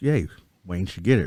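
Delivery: plain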